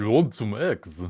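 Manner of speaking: put-on Russian accent. Told the accent sounds austrian and irish, speaker insists: russian accent. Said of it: "it's just Russian".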